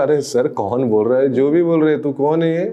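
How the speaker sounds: ordinary delivery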